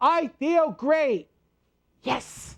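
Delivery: said with full conviction. Guiding listeners through an energy exercise, saying the phrase like you mean it. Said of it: "say this like you mean it".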